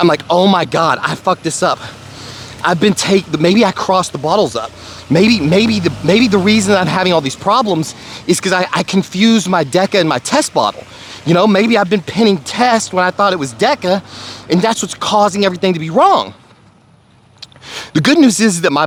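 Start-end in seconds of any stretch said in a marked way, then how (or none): none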